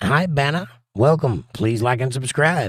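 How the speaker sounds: ordinary talk, nothing marked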